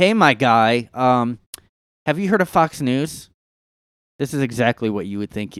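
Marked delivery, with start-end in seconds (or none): 0.0-3.3 put-on patronizing, talking-down tone. Imitating a commenter's reply: imitating a condescending tone. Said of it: "Condescending right away".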